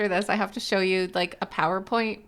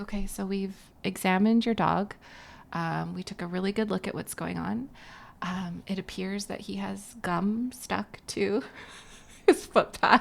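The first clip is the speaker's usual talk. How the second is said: mock-serious, much quieter and slower; 7 dB quieter than usual. Retelling how the doctor, a friend, came in to report on the dog: Christy Leslie, put-on serious tone. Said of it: "she's all serious".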